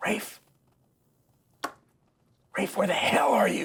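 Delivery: loud, carrying stage whisper, calling out. Narrator voicing an unseen figure calling for Rafe, in a loud whisper. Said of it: "It's only a loud whisper".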